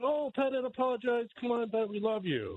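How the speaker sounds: effusive, pitched way up. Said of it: "They were like".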